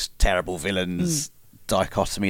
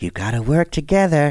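high, loud, punchy put-on cartoon villain voice; 7 semitones higher, 5 dB louder than usual. Joining a bit about another universe, cooperative Joker impression. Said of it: "That's my impression of cooperative Joker".

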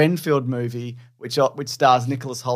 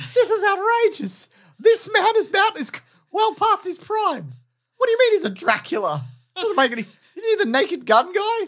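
very high put-on childlike little-boy voice. Claire retells what she said at home as a boy: put-on little-boy voice. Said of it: "Stop talking in this voice".

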